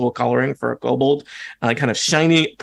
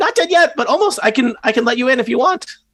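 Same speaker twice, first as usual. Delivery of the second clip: very high-pitched little creature kobold voice; 11 semitones higher, 3 dB louder than usual. Voicing a kobold caught working on a lock: kobold character voice. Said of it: "the kobold, uh, drops, uh, all of his little tools".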